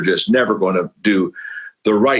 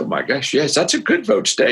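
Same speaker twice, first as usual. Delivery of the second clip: put-on laughing speech, higher; 8 semitones higher than usual. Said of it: "he started laughing".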